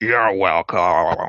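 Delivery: weird, warped, distorted voice. Narrator voicing an unseen speaker answering a thank-you, weird distorted voice. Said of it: "a weird, uh, distorted voice say".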